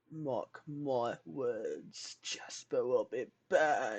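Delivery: theatrical, heavily emphasized dramatic declaration. Repeating a joking threat: dramatic delivery. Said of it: "Had to add that dramatic effect".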